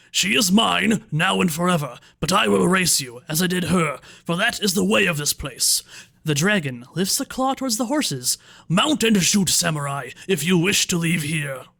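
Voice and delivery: resounding hollow voice. Game master voicing a dragon addressing the samurai: booming hollow voice. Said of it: "it booms out in a hollow voice".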